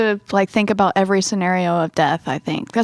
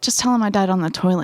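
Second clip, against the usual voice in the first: ordinary delivery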